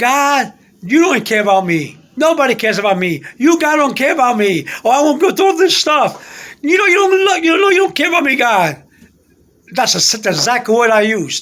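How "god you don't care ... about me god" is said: loud yell. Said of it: "and I yell".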